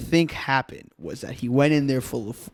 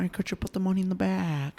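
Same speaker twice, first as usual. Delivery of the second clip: gentle, unthreatening, polite tone, a touch higher; 6 semitones higher, 6 dB quieter than usual. Joking about how a robber might ask for money: Owen Wilson voice. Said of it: "someone like Owen Wilson will come".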